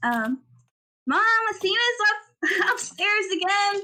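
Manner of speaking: echoing voice calling out. Narrating a scene to the players, voice an echoing voice calling downstairs. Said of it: "You hear a voice echoing down the stairs".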